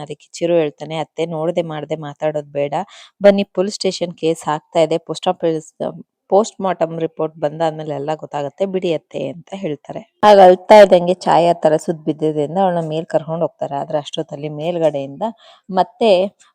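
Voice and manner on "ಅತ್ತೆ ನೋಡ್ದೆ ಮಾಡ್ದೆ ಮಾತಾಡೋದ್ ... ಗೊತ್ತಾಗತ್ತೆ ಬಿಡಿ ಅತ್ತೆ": ordinary talk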